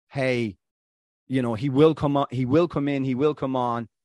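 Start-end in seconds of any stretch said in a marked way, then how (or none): none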